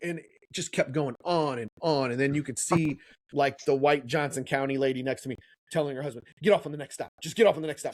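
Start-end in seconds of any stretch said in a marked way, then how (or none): 6.4-7.9 put-on genuinely upset, urgent, rushed tone. Retelling what the lady next to them told her husband, imitating someone really upset. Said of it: "like really upset".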